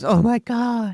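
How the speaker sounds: mock gasping. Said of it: "Bobby gasps and goes".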